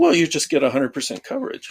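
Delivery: heavy, knowing sarcasm in swooping sing-song. Answering a question about testing dynamic code, sarcastic. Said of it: "I'm being sarcastic".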